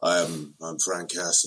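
very low, flat, tired, weary-sounding voice. Retelling a film's opening narration: imitating Dolph Lundgren's tired American voice. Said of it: "Dolph Lundgren for the first time in his proper voices".

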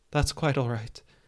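voice trembling a little, shaky, unsteady. Getting up from the ground after nearly being hit by an arrow: shaky. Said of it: "he said shakily".

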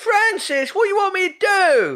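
put-on very high, loud shout in a Cockney accent. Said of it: "speaking in a Cockney accent".

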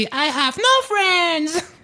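put-on sweet old-fashioned robot voice, high and slow. Retelling what a remote-controlled robot said: imitating a cute old-fashioned robot voice. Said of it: "avec cette voix trop mignonne de robot d'à l'ancienne".

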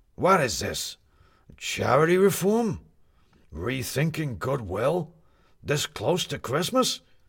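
disgruntled, irritable, displeased tone. A newspaper editor reads a writer's copy and questions it, unhappy shouting. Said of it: "because [name] was always unhappy. / because [name] was always unhappy. It was just a matter of giving him new things to be unhappy about. / And then it made [name] himself unhappy, / If [name] was im".

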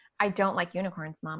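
normal talking voice

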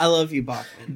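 said with utmost spite and malice. Telling another player something at the table: said with utmost malice. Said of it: "I say with the most malice I've ever said".

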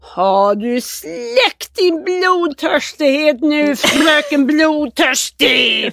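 play-acted crazed, unhinged call, very slow and drawn-out. Retelling skiing down to meet them, imitating Pelle shouting. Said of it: "ropa så här".

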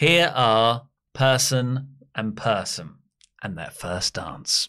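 calmest, nicest, gentle, pleasant announcer voice. Practicing introducing a couple's first dance, as asked: calmest, nicest voice. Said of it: "That's like my calmest, nicest voice".

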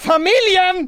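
piercing, very high, very loud shrieking shout. Retelling a scene where Rudolf loses everyone at the mall: imitating Rudolf shouting into the mic. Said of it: "skriker han in i micken så här".

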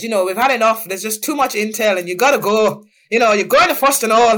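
fast put-on Irish accent. Retelling being told she must go to Foston Hall: imitating Mr. Sloan's Irish accent. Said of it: "comes with his Irish accent and says".

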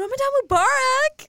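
put-on very high, loud voice in Southern accent. Retelling a passerby's greeting on the street, imitating a southern accent. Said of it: "In, like, that southern accent".

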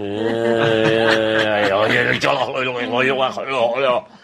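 put-on Scottish accent. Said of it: "That's Scottish for make sure she's home by nine".

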